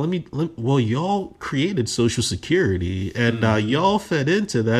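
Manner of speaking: ordinary talk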